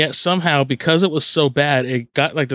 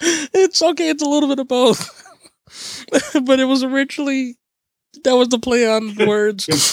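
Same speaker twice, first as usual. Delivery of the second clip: can't stop laughing while talking; 10 semitones higher than usual. Answering a question about the podcast's name, the speaker can't stop laughing. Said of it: "I can't stop laughing to answer that question".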